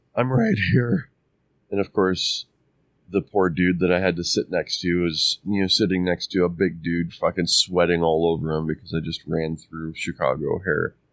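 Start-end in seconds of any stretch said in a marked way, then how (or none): 0.2-1.1 mock out of breath, panting, gasped delivery. Retelling reaching the gate as the doors were closing: retelling a breathless reply. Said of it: "And breathlessly".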